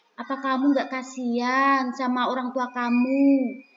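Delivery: soft, gentle reproach, "kamu" drawn out. Acting out a teacher making a child feel guilty, soft voice. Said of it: "suaranya guru itu lembut, nah, seperti ini".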